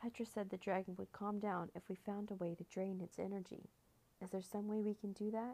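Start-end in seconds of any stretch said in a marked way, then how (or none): none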